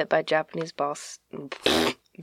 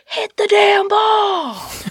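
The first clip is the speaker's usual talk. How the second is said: put-on screaming voice, higher and louder; 8 dB louder than usual. Retelling what a heckler at a baseball game did: imitating a screaming heckler. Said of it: "he's screaming".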